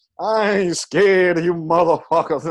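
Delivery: very slow delivery, every word drawn out. Retelling a comic's opening line to a booing crowd: Bernie Mac voice. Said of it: "and Bernie Mac voice and shit".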